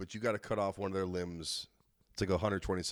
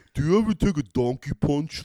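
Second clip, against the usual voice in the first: put-on dumb bro voice, higher and louder; 7 semitones higher, 12 dB louder than usual. Talking like a moron, Sylvester Stallone voice. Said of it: "Like that".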